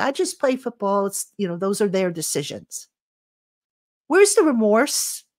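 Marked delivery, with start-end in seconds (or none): none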